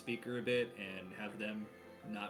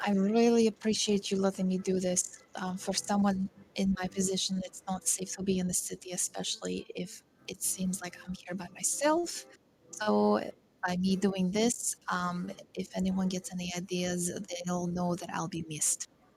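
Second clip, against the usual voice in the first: quiet, hushed speech under the breath; 10 semitones higher, 11 dB louder than usual. Voicing a character talking quietly to a companion: speaking quietly under her breath. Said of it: "Sherbin's quietly talking, uh, to Sid under her breath".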